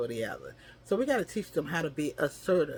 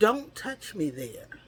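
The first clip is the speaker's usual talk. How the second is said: loud, high, firm, forceful no-nonsense tone; 7 semitones higher than usual. Showing how children should refuse inappropriate touching, loud and firm. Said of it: "screaming no in a loud and firm voice".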